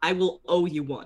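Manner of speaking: whispered line. Playing a character who grabs another by the arm: whispering in character. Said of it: "I'm gonna whisper to him".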